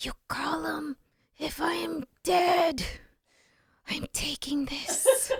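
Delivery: very high-pitched, very slow half-whisper. Recounting a phone call about a contract, quoting what they half-whispered; retelling a half-whisper. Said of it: "And I whispered".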